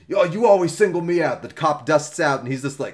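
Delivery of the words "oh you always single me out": mock annoyed, pissed-off griping tone. Acting out a driver pulled over by a cop: imitating a pissed-off driver. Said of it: "all pissed off".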